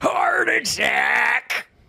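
very high, creaky, rough baseball coach voice. The speaker offers his impersonation of a film coach: Major League 2 coach impression. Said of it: "You want to hear my impersonation of".

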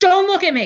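furious shout, very high and loud. Retelling an inner voice heard on a summer day: imitating an angry yelling voice. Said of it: "in a yelling, angry, like, voice".

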